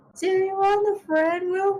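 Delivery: thin, small, pleasant voice, very high pitch. Reading a book aloud, voicing an unseen new friend: thin but pleasant small voice. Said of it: "It sounded rather thin, but pleasant".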